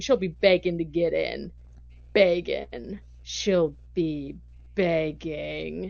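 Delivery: menacing, every word very slow drawl. Retelling a scene, the speaker quotes Grizzly answering Wesley: imitating Grizzly saying it really slow. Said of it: "he like says it really slow".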